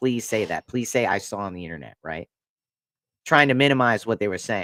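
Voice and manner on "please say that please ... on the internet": put-on begging tone, thick with sarcasm. Retelling his own reply to another person during an argument: imitating his own sarcastic pleading. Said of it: "I was being sarcastic".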